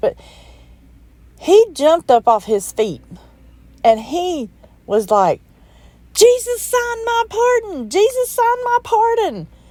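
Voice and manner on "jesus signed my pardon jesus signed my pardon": mock very high-pitched yelling, said twice. Retelling her dad jumping up after reviving: imitating someone yelling. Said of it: "he kept yelling".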